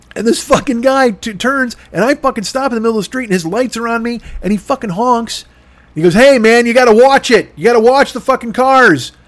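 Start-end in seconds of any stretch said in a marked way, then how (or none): 6.2-9.1 loud, hollering yell. Retelling a driver honking and scolding in the street: imitating a driver yelling. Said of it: "What are you yelling at me for".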